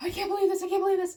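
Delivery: put-on high, rapid, rattled-off frantic panic. Retelling panic after the turtle was killed: imitating a frantic voice.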